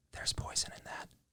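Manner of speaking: faint, hushed, breathy, barely voiced whisper. Retelling a voice heard behind the head as a child: imitating a whisper.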